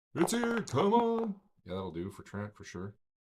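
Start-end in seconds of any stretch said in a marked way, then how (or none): 0.1-1.3 very high, loud, slow, drawn-out shriek. Voicing a character warning others that a creature has come: Bernard screaming. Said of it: "I'm assuming Bernard's screaming, like".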